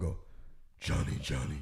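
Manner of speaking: spooky, very deep, quiet, hushed scary voice. Showing the voice he uses to scare his kids, in a scary voice. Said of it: "Like it scared the shit out of her".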